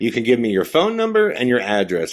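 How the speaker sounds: swooping, announcer-style proclaiming delivery. Retelling a line heard in an edited clip: imitating an announcing tone. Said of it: "he does it in a way like he's announcing it".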